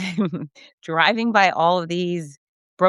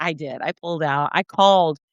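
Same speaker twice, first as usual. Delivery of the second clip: normal talking voice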